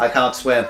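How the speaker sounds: utterly unimpressed, unbothered, shrugging tone. Retelling a cartoon scene, imitating unimpressed Sonic. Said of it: "he sounds so unimpressed".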